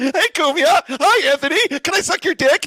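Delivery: very high, shrill, loud, theatrical voice. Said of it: "That's a pretty good impression".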